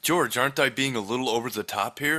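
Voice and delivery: plain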